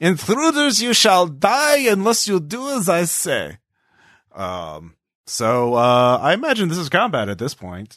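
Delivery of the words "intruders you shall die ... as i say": put-on German accent, very high-pitched. Voicing a voice that threatens intruders: German voice. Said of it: "a German voice comes in".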